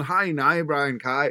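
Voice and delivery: imitated Northern Irish accent. Acting out a friend's phone greeting when he suddenly adopted an accent as a joke. Imitated Northern Irish accent. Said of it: "he decided to do it in a Northern Irish accent".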